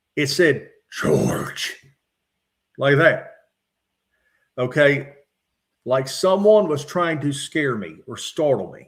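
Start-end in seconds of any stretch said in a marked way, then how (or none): 0.9-1.7 very low, whispered, animalistic voice. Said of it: "I'm gonna imitate this voice".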